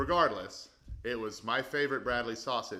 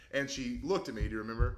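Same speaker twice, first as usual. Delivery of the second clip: normal talking voice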